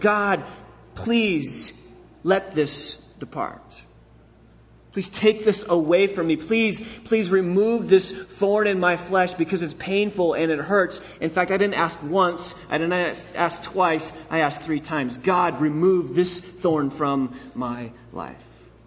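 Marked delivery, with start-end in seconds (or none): 0.0-11.0 acted-out pleading, begging tone. Speaker retelling another man's prayer, acting out begging the Lord. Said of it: "I begged the Lord".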